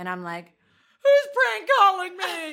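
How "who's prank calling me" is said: tearful crying voice, higher and louder. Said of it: "Crying 'cause I don't know what's happening".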